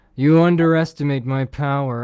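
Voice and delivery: booming, very loud film-style voice at full volume. Quoting a movie line: Hayden Christensen voice. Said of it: "I used to be good at Hayden Christensen voice".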